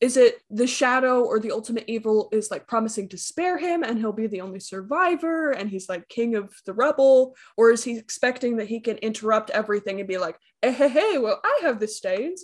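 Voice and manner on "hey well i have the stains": put-on southern country accent. Speculating about what a character might say, southern accent. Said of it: "it's like a southern".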